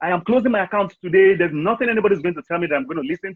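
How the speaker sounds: angry, shouting outburst. Telling a story about a man in a bank, retelling a man shouting. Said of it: "He just started shouting".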